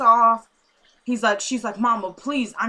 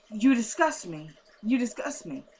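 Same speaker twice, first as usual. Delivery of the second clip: soft, tearful crying voice; 5 dB quieter than usual. Speaker retelling a man's reaction to news about a girl, imitating someone crying. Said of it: "And he's crying".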